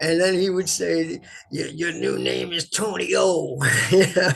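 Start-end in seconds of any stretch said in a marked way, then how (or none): 1.5-3.6 big, rough, gruff growling voice. Retelling what Hubert said while they played guitars together, Hubert's big growly voice. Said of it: "big growly voice".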